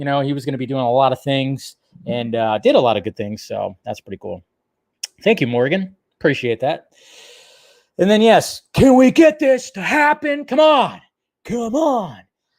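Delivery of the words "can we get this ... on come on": very high voice, words dragged out. Asking for a casting to happen: Nicolas Cage impression. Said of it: "my best, uh, Nicolas Cage impression".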